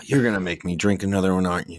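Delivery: low, begrudging, reluctant grumble. Acting out a reluctant drinker in a dive bar scene: imitating a begrudging drinker. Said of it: "the begrudging".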